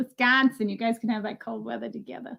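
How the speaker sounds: terrible, badly attempted put-on Wisconsin accent. Learning a viewer is from wisconsin, addressing them in a bad wisconsin accent. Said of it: "that was a terrible Wisconsin accent".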